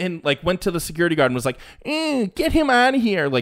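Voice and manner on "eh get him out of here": whiny, very high, slow, drawn-out voice. Retelling how a golfer had a heckler removed: mocking whiny Justin Thomas imitation. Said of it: "such a whiny little baby".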